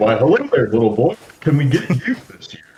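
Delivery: meek, high, sing-song delivery. Taking up the challenge to do a better voice, trying a Santa Claus voice. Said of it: "I'll do it".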